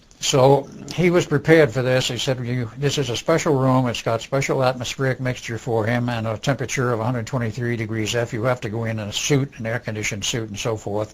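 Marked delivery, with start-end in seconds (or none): none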